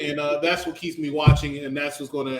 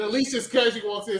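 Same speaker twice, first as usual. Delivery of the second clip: ordinary talk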